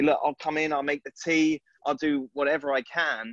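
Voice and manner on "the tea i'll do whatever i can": normal talking voice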